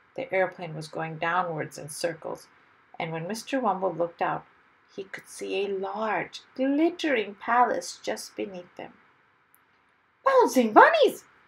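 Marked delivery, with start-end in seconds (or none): 10.2-11.2 very high-pitched, very loud burst of excitement. Mr. Wumble looks out of the descending aeroplane, in great excitement. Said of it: "Exclaimed Mr. Wumble in great excitement".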